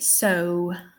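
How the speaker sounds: posh, royal RP British accent on "so". Pronunciation lesson on vowel sounds, king's English accent on 'so'. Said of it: "I believe the king would say so".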